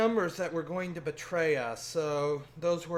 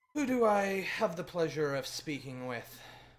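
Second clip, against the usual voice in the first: perfectly composed, collected, very calm voice. Voicing a character who answers the phone: very calm voice. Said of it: "you hear a very calm voice".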